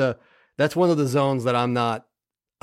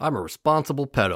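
sardonic, sarcastic, mocking-sounding delivery. Saying a puppy will spend six hours at doggy daycare: sarcastic. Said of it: "that came across really sarcastic".

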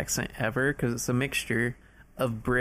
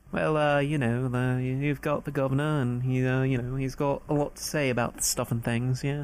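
attempted put-on British accent. Speaker trying out an accent on the spot, attempted British accent. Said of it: "do I even sound British?".

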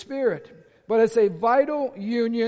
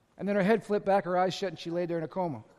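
plain

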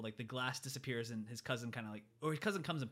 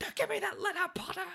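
put-on very high, shrill, panicked, frantic outburst; 7 dB louder than usual. Retelling a movie scene with the letters: imitating Vernon freaking out. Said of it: "Vernon's just freaking out, like".

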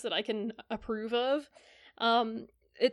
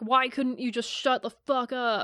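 put-on angry yelling; 3 dB louder than usual. Recounting a story where a man yells at a woman, imitating a man yelling. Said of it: "he just starts yelling at her".

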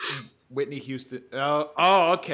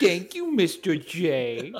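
slow, swooping, drawn-out sing-song cartoon voice; 3 semitones higher than usual. Offering to do their Harley Quinn, the speaker says a line in Harley Quinn voice. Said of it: "You guys want to hear my Harley Quinn?".

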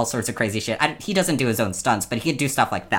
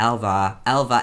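usual speaking voice

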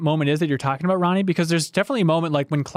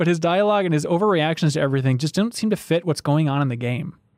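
plain

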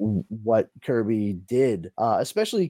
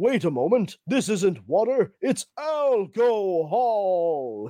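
put-on very deliberate, slow, drawn-out old-cartoon hero voice; 8 semitones higher than usual. Quoting a hero from an old Avengers cartoon: imitating an old Avengers cartoon character. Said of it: "And then all of a sudden he goes".

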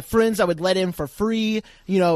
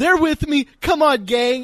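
mock tearful crying voice, higher; 8 semitones higher, 4 dB louder than usual. Retelling a coworker quitting and walking out: imitating someone crying. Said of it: "she's just crying as she walks out".

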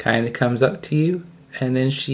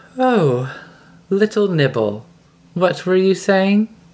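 voice of a giant spider queen; 4 semitones higher, 3 dB louder than usual. Narrating to players, a woken giant spider woman looks down and speaks: giant spider woman voice. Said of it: "she looks down at you and says".

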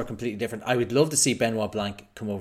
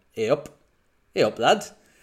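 slow, terrible put-on Newcastle Geordie accent; 2 semitones higher, 3 dB louder than usual. Mimicking how country British people will greet them, in a bad Newcastle accent. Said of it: "that was a terrible Newcastle accent".

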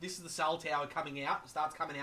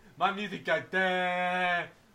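mock dim-witted voice, louder; 2 semitones higher, 6 dB louder than usual. Acting out a meme about a dim-witted metal fan: imitating a dim-witted guy.

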